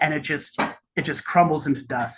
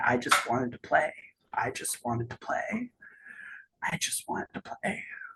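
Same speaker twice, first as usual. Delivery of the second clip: whispered, hushed, despondent muttering; 7 dB quieter than usual. Voicing the last despondent fallen as its screams turn into words; slight despondent muttering. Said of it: "you just you hear a slight muttering".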